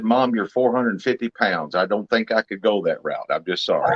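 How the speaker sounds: normal talking voice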